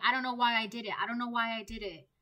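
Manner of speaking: put-on crying voice. Acting out a karmic friend who regrets what they did: imitating someone crying. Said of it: "They're crying".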